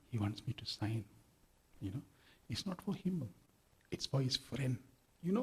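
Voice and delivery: put-on whisper. Retelling what was whispered about a boy's picture: imitating someone whispering. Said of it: "All this is whispering to me".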